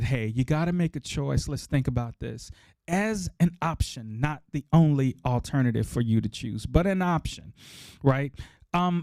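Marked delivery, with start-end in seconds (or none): none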